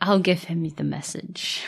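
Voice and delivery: quiet, very serious, formal voice. Discussing a goodnight scene with others, imitating Millie's serious voice. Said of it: "how serious Millie's voice is".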